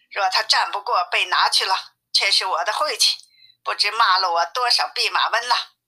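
ordinary delivery, nothing marked

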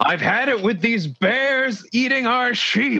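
very high-pitched voice yelling out. Voicing the bartender after a shot lands above the door: yelling bartender. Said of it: "the bartender yells out".

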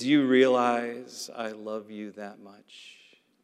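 put-on whisper. Retelling what mom said while the family crowded around: imitating a whisper. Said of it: "she whispered to me".

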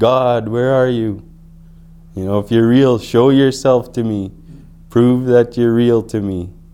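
put-on screaming, crying out. Retelling crying out to God alone by the lake: retelling a scream. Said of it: "I'd scream out".

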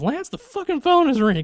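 mock very high, shrill, rushed shouting. Recounting what Jody yells to Lance, the speaker acts it out: retelling Jody's yell. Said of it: "I just like how she yells".

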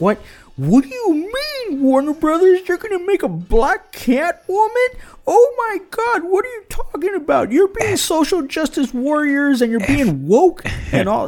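shrill, very high, scandalized, outraged ranting. Retelling how fans reacted to a casting choice: imitating outraged fanboys.

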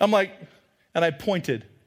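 ordinary delivery

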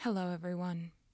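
sombre, solemn, subdued tone. Opening a theater podcast episode, greeting listeners, somber. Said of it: "If you couldn't tell by the sound of my voice".

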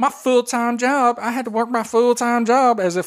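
mocking impersonation. Speaker throws the other person's words back at her, mocking imitation of her. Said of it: "I'll do it like you".

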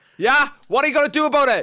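excited, high, loud, hyped commentary-style voice.

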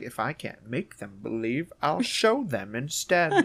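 animated cartoon voice with pitch swinging all around. Retelling a film scene where a boy does an impression: Grinch voice. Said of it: "Elliot does a little Grinch impression".

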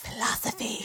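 hushed, soft, breathy, mystical whisper.

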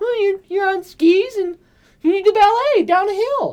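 put-on shrill, very high, very loud little-kid voice. Acting out a child answering a question: imitating a four-year-old's voice. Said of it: "his four-year-old voice".

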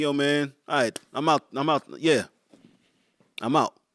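mock nonchalant, callous indifference. Retelling a killer being told his sentence: imitating a nonchalant killer. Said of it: "a stone cold killer be told his".

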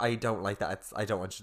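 ordinary talk

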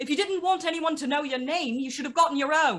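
loud, high-pitched jeering shout. A game player's character runs up to a woman before attacking, shouting a taunt. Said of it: "I'm going to shout".

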